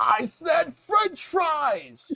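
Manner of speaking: acted furious yell, very high and drawn out. Retelling a favorite drive-thru scene: imitating an angry shout. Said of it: "angry guy that just shouts out".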